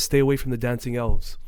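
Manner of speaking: plain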